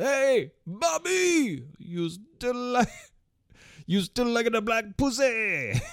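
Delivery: high, loud yelled heckling tone. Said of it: "he just yells out".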